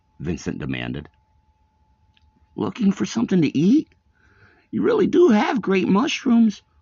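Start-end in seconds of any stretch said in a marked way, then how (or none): 2.6-6.6 very high, loud, talking through a mouthful. Reading a story, the ghost Mort answers Vincent while eating; Mort speaking with mouth full. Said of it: "[name] said, stepping into the room and resuming his seat in the wet chair. The ghost was eating a sandwich. / trying his best to sound spooky".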